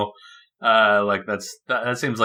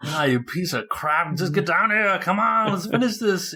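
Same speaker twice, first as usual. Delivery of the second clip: worn-out, at wit's end, pitched-up taunting tone; 8 semitones higher than usual. Acting out Arnold's line from the movie: imitating a tired Arnold. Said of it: "he's tired".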